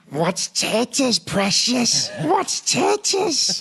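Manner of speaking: very high, loud creature voice. Taking your turn after someone else's impression, show yours: a Gollum impression. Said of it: "when I do a Gollum impression".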